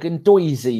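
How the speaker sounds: put-on New York accent. Showing how he used to pronounce a word, in a New York accent. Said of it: "Do I sound like one of your people from New York?".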